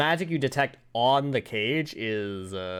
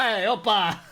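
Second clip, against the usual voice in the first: put-on comic Italian accent, higher pitch; 9 semitones higher, 4 dB louder than usual. Joking about how a creature in the campaign speaks: funny Italian accent. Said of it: "Speaks in a funny".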